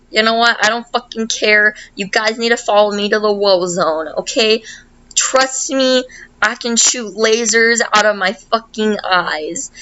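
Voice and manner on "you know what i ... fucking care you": ordinary delivery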